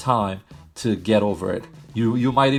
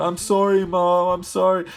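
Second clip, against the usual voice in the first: put-on high, drawn-out, tearful crying child's voice; 8 semitones higher than usual. Acting out a scolded child apologizing to mom: imitating a crying child. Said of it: "you start crying and you're just like".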